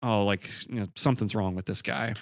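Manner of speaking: plain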